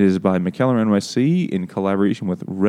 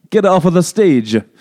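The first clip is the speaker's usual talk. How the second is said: exaggerated fake Italian accent, loud, high yell; 9 semitones higher, 7 dB louder than usual. Speakers imagine an Italian Statler and Waldorf; heckling as fake Italian Statler and Waldorf. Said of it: "but with a bibbidi-bobbidi accent".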